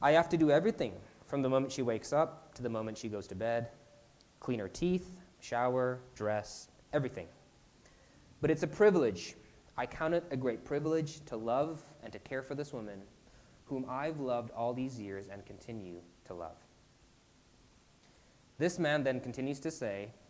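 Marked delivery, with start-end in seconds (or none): none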